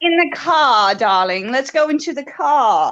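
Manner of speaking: car and darling said non-rhotic, R dropped. Explaining that their accent doesn't pronounce the R, demonstrating: dropping the R. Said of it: "because we don't like to pronounce the R".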